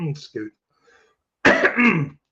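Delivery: choked coughing fit through the words. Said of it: "you got me all choked up".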